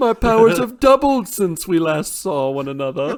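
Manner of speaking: put-on very loud, very high-pitched British accent. Doing a bit with co-hosts: british voice. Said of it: "I'm talking with a British voice".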